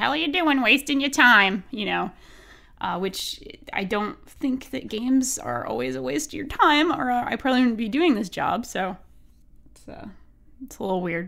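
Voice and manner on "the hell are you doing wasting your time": put-on old grandma voice, higher. Describing scolding yourself for wasting time, in an old grandma voice. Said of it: "I get like an old grandma voice that's like".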